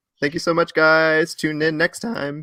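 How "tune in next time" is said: voice breaking and cracking mid-phrase. Host signing off to the audience at the end of the show: voice cracking. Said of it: "nice little voice crack I got".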